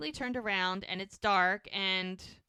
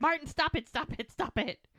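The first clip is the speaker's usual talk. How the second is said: high, shrieking scream, repeated over and over; 7 semitones higher than usual. Retelling a scared actress on a rocking Ferris wheel: imitating someone screaming. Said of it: "screaming and she's like".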